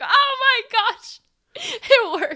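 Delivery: high, loud, echoing scream. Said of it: "the echoing scream".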